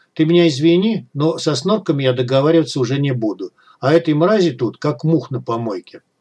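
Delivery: plain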